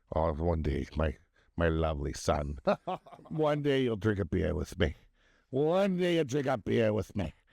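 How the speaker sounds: put-on Scottish accent. Quoting what their dad always used to say, in a put-on scottish accent. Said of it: "You did a Scottish accent for their Irish dad".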